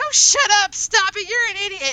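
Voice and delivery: high, loud, flustered and embarrassed. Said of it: "he'll be like".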